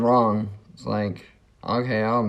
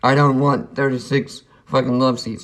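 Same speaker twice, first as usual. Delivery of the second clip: put-on angry, fed-up griping complaint; 3 semitones higher than usual. Retelling what he said the next day: imitating someone complaining angrily. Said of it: "he's bitching and complaining at me".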